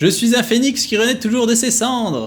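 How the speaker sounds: very high, shrill, loud character voice. Reading game dialogue aloud, speaking as the other character: voice of the other character. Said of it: "parler avec la voix de l'autre".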